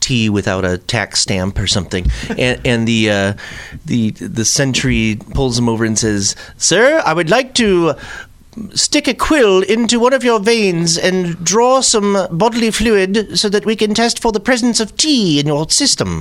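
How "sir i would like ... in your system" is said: goofy, silly, pitched-up put-on British accent. Imagining a sentry stopping a man suspected of untaxed tea: silly British accent. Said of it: "I have that silly British accent".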